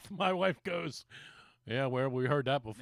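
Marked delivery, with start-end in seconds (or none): 1.6-2.8 put-on quiet mutter, low, under the breath. Retelling what his wife said under her breath in bed: imitating a mutter under the breath. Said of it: "under her breath".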